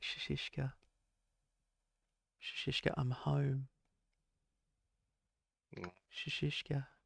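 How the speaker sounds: gentle, hushed, soft half-whisper. Describing a woman coming home to a snoring partner, speaker voices her: imitating her half-whispering. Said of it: "just starts to whisper".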